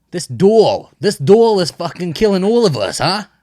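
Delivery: put-on New Jersey accent, very high, shrill and loud. Asked by the other speaker what a jersey accent sounds like: new jersey accent. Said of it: "what's a Jersey accent sound like?".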